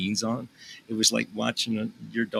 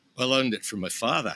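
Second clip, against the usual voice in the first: put-on Scottish accent; 2 semitones higher than usual. Retelling what people in Scotland say about learning: Scottish accent. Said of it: "That's a pretty good Scotland".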